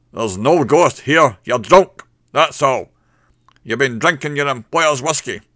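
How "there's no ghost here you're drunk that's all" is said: very loud, resounding, booming voice. Andrew, the hotel owner, answers the barman clinging to him; booming. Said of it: "Andrew's voice booms out".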